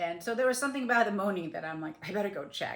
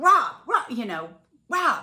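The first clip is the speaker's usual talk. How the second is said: urgent, very loud, high-pitched yelling; 6 semitones higher, 11 dB louder than usual. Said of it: "I resuscitated him by yelling at him".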